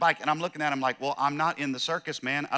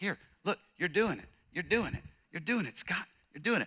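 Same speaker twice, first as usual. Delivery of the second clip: put-on gentle encouraging voice, higher and quieter; 3 semitones higher, 6 dB quieter than usual. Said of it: "he's so gentle".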